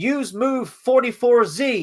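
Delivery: acted barked shout. Recounting a scene where combo moves are called over a headset, acting out shouted commands. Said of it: "he's shouting like Street Fighter combo moves".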